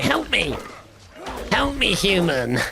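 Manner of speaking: put-on goblin creature voice. Playing a goblin stuck in a cage, in a put-on goblin voice. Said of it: "Give us a taste of what your goblin would sound like".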